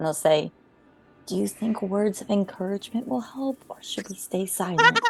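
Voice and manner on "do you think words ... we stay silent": soft, half-whispered aside. Half-whispering in character into Duke's ear in a cramped tunnel: half-whispering in character. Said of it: "whisper into Duke's ear".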